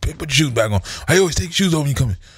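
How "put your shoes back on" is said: hollering loudly. Retelling how a host hollers whenever the speaker takes shoes off, imitating a man hollering. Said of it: "he hollers at me every time".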